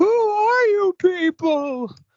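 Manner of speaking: high, slow, loud cartoon scream.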